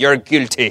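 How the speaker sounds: put-on British accent. Joking about a stern judge in wig and robe: imitating a british judge. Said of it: "staring at you with his British accent".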